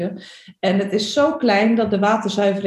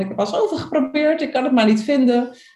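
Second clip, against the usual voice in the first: rushed, pitched-up, mock mildly exasperated tone; 5 semitones higher than usual. Speaker retells what they called out to their sister, acting a bit frustrated. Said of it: "een beetje gefrustreerd van".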